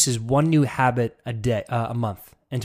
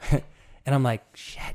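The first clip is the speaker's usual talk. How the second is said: ordinary talk, nothing marked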